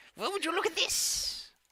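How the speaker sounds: put-on very high-pitched elderly woman voice. Voicing an old lady character met by the players: old lady voice. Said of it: "Just an excuse for [name] to do the old lady voice".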